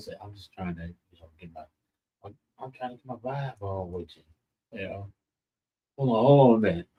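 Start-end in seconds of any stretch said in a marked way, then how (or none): 0.2-5.1 hushed, very quiet, low murmur. Speaker retelling a man's phone call to the audience, retelling a man speaking low. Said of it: "speaking real low".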